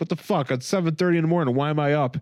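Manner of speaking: put-on fuming, angry complaining rant. Retelling a comic scene where Guy Gardner is woken early: imitating an angry Guy Gardner. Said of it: "he's just so angry".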